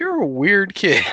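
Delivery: amused teasing, high, loud and slow.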